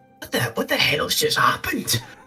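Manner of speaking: hushed whisper under the breath. Playing a character who whispers to Sayers, in a hushed whisper. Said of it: "in a hushed voice whispers".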